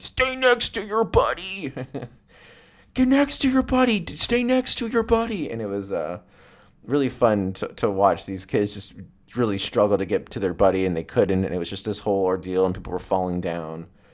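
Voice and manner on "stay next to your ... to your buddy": mock shrill, very high, repeated shouted yell. Recounting kids swept up in the current, quoting one of the guys: retelling his yell. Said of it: "you could hear one of the guys yelling like".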